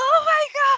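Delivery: shrill, very high-pitched shriek. A game master voices her as the player comes up on her, shrieking. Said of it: "she shrieks like".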